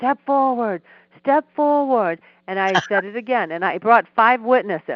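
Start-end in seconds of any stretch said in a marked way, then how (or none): 0.0-2.2 mock screaming, high-pitched. Retelling a courtroom moment, acting out the judge screaming at him. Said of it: "the judge started screaming".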